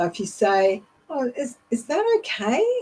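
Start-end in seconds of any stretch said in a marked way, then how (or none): 1.7-2.6 very high rising pitch on okay. Showing that lifting the voice at the end implies a question, rising pitch on okay. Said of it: "lifting your voice up at the end of a phrase implies a question".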